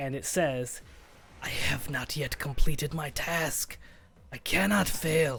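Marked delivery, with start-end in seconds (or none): 1.4-5.4 hoarse, raspy, rasping delivery. The storyteller voices a severed head heard inside everyone's head; raspy Von Richten voice. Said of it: "this raspy voice that sounds a bit familiar".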